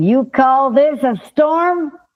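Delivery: slow, drawn-out yell. Retelling a movie scene at the mast in a storm: imitating Lieutenant Dan yelling. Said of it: "Lieutenant Dan goes up to the mast and starts yelling".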